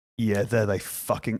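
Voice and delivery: low, venomous, spiteful, contemptuous mutter. Speaker recalling the Edinburgh Fringe, venomous. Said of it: "shouldn't have that much venom in my voice".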